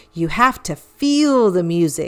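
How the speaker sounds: usual speaking voice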